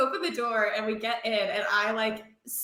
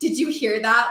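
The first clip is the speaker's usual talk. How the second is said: put-on aggressive whisper-shout; 6 dB louder than usual. Retelling a scary night to friends, imitating an aggressive question. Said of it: "really aggressively".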